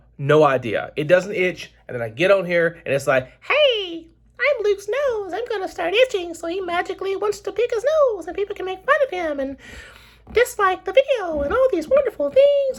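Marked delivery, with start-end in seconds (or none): 3.4-12.8 squeaked out at very high pitch. Speaking as his own itchy nose on camera, Mickey Mouse voice. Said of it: "Why am I talking like Mickey Mouse?".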